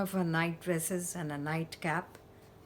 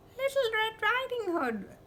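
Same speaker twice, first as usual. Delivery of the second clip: very high, put-on disguised voice. Reading a fairy tale, the narrator voices the wolf answering at grandmother's door, high voice. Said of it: "replied the wolf in a high voice".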